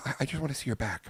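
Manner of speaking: put-on jittery, nervous, halting, stumbling delivery. Retelling Joe showing up at the speaker's office, the speaker quotes him: imitating Joe's nervousness. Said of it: "like he was like nervous".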